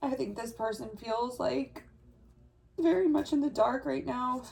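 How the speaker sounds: emotional, near tears. Describing a person who feels lost, getting emotional. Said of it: "I don't know why I'm getting so emotional".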